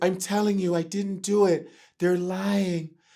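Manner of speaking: soft-spoken, hushed, creepy voice. Acting out Michael denying it, in a soft Michael impression. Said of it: "Michael's like this".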